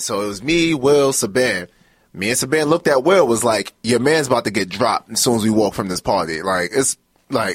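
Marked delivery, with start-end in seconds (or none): none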